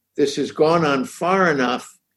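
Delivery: ordinary talk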